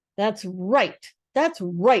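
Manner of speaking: grumbling, growling voice. Narrator voicing the other dwarves agreeing with Greffel, growled. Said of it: "growled the other dwarves".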